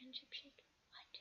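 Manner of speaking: mock soft whispered aside.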